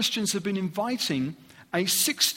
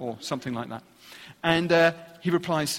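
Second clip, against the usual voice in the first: usual speaking voice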